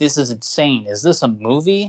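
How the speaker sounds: plain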